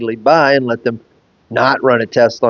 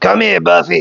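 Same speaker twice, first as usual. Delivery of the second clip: snapping, gravelly smoker's rasp growl, pitched up; 6 semitones higher than usual. Retelling how a great aunt called her dog: imitating a gravelly growl. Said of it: "she would growl".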